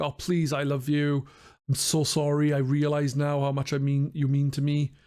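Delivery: imitated begging, pleading tone. Retelling a scene where a character on his knees begs: imitating someone begging. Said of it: "he's begging her, like".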